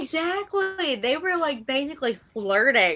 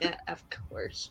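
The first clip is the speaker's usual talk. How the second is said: mock whispered, breathy, deflated, disappointed; 7 semitones lower, 13 dB quieter than usual. Retelling a tv scene, a man's reply to her: acting a disappointed reply. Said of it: "looks at her like, totally, like, disappointed".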